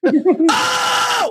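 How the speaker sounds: put-on, very high, sudden screaming outburst. Retelling a comedian's open mic answer to a heckler: imitating Sam screaming. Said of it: "he just started screaming".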